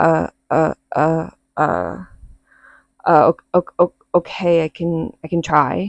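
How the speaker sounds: mock choked-up frozen stammer. Speaker retells freezing up when told to try: retelling a choked-up freeze. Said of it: "my throat like closing up".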